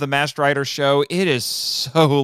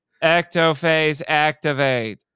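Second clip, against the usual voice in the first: mock flat, dry delivery, slower. Mocking how an actor says his new transformation phrase, imitating a dry delivery. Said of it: "He's just dry".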